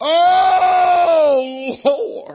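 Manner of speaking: loud, high-pitched wail full of desperation.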